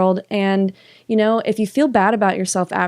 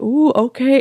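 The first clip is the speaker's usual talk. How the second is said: high, playful ooh with a laugh in it; 5 semitones higher than usual. Retelling how the producers answered being told to go outside: imitating playful laughing. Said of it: "they kinda laughed, you know, th-, like, in a playful way".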